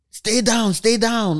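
high, loud, drawn-out yell. Retelling gunshots nearby, imitating grandma yelling. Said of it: "my grandma will be yelling".

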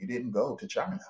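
hushed, soft half-whisper. Retelling what the speaker half-whispered to a woman; retelling a half-whisper. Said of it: "but I whispered that to her".

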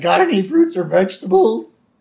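put-on squeaky, high little kid voice. Retelling a story about Homer at a booth, quoting the kid working it in a squeaky kid voice. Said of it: "The same kid with the squeaky voice".

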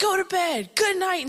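very high, loud yelling. Retelling how Paul sent the girls to bed, imitating Paul yelling. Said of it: "he's like yelling at us and he's like".

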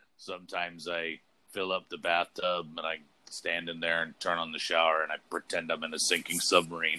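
totally deadpan, low, flat monotone. Retelling a comedian's stand-up routine, imitating his flat deadpan delivery. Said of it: "He's totally deadpan".

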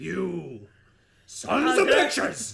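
mock gangster shouting. Imitating Michael Corleone at the dock dancing: Al Pacino style yelling. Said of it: "But Pacino style".

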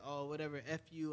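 normal talking voice

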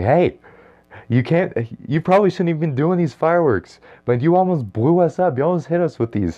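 high-pitched, shrill top-of-the-lungs yelling. Recalling yelling at people doing fireworks in a parking lot, retelling own yelling. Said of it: "I was yelling at the top of my lungs".

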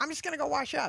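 put-on New York accent. Retelling what Marty said walking out the door before lunch, Marty's New York accent. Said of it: "he's got that New York accent".

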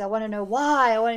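loud screaming voice. Describing a character's breakdown, retelling Melinda's anguished scream. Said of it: "She screams like that".

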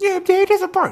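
really high-pitched, piping voice. Retelling asking John where the party was, imitating John's high voice. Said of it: "John had a really high voice".

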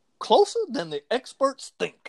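done badly, very high and swooping. Quoting a college football analyst's catchphrase: terrible Lee Corso impersonation. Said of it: "my terrible Lee Corso impersonation".

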